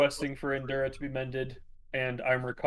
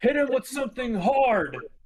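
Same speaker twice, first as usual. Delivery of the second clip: shrill, loud, very high barked shout; 11 semitones higher, 6 dB louder than usual. Pointing at an enemy and calling to the party: shouting in character. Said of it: "I'm gonna shout".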